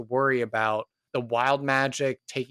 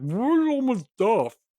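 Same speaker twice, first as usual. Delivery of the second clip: very high, muffled through a full mouth; 9 semitones higher than usual. Narrating a scene, a character answers while still eating, talking with mouth full. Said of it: "with a mouthful of food".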